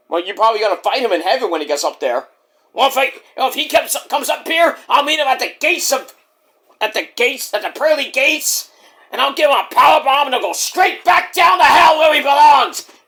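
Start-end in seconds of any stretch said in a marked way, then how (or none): 2.7-12.8 furious, angry wrestler rant, pitched high. Doing an impression of a wrestler raging about a rival: imitating a furious wrestler. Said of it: "Mike, calm down now".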